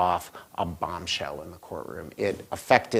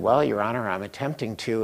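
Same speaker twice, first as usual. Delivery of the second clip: normal talking voice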